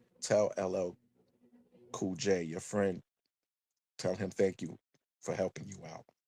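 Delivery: gentle, soft, hushed, faint half-whisper. Retelling a mother's words at a nursing home: imitating a soft half-whisper. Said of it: "softly said, it was like a whisper".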